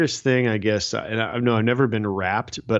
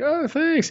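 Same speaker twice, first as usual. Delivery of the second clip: much higher-pitched, imitated mimicking voice. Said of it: "she's like".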